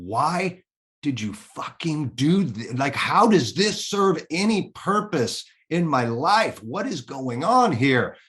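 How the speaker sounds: weepy, furious, tearful outcry. Recounting a breakdown, the speaker reenacts yelling out to god in tears. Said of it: "I yelled out to God in that moment. I'm in tears".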